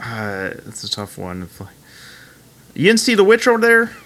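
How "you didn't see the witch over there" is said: Pittsburgh accent, much higher. Asked by another speaker to demonstrate, the speaker tries a Pittsburgh accent. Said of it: "Would you demonstrate that for me?".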